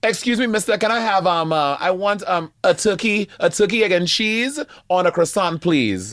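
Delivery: put-on Caribbean accent. Asked to give a bodega order in a caribbean accent, speaker does it. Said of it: "Oh my Caribbean accent right now".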